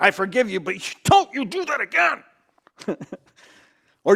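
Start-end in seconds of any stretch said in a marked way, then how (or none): 0.0-3.0 stern, slow, angry scolding voice. Speaker voicing Jesus's words to show one possible tone, angry voice as Jesus. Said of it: "do you hear an angry voice?".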